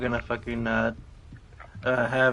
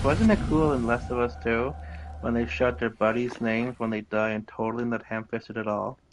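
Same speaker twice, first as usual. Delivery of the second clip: plain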